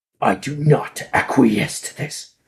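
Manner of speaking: rumbling growl from the chest. Voicing Vethron in a scene before he walks out, low rumbling growl. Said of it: "like a low rumbling growl from them".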